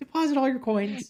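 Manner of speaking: shifty, squirrely voice, very high-pitched. Joking about collecting donations, putting on a mock squirrely tone. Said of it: "sound really squirrely".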